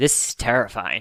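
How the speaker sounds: put-on sarcastic, insincere tone. Retelling a remark to dad during a boring opening: imitating own sarcastic remark. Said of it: "I sarcastically looked over to my dad".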